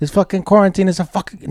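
high-pitched mobster voice. Joking about quarantine with a friend, doing an Italian mobster Paulie voice. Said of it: "My Italian voice is a little bit higher pitched".

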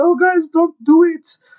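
very high, shrill, bad and clumsy Finnish accent. Imagining a player pleading from the back of a fight, as Lauri Markkanen. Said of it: "I don't think that's a Finnish accent".

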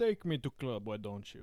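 low put-on Russian accent, articles dropped. Group taking turns trying a russian accent: russian accent. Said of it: "Let's all try and do a Russian accent".

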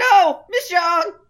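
very loud, high shout at full lungs. Recapping a scene, acting out a character's outburst, retelling a full-lungs shout. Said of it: "shouts at the top of his lungs".

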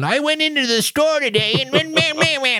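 put-on high, shrill, grumbling, cranky old man voice. Retelling how own old episodes sounded: imitating a grumpy old man. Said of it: "I just sounded like a grumpy old man".

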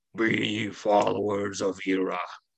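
stony, rocky, grumbling voice. Narrating the game, the speaker voices a rock monster in a rocky grumbling voice. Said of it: "grumble out in a rocky voice".

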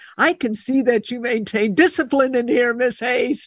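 put-on booming voice. Retelling what the principal said on entering her classroom, principal's booming voice. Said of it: "this booming voice of my principal".

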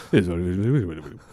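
commercial announcer voiceover, end-of-ad style. Imitating the voiceover announcer at the end of a commercial: commercial voiceover guy voice. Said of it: "at the end of a commercial, you hear that one guy comes in at the Voice".

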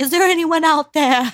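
loud, high, calling-out yell. Describing a guy down by the barrels calling out, retelling a Titanic-style yell. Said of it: "he was yelling".

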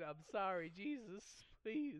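begging plea through mixed laughter and sobs. Retelling breaking down during the service, apologizing: imitating own laugh-crying. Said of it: "I start laugh crying again".

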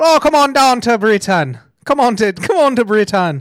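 doing a Jamaican accent. Speaker tries out accents while introducing a news story, in a Jamaican accent. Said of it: "That's Jamaican".

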